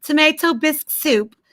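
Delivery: phony put-on British accent. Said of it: "faking a British accent".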